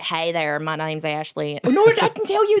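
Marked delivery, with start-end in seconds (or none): 0.0-1.6 put-on American accent. Retelling auditions, American accent. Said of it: "auditions where I've been like".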